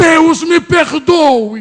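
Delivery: acted desperate man's shout, sobbing, weeping, pleading. Retelling how a man on the floor cried out to God: imitating a man shouting. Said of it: "E ele começou a gritar".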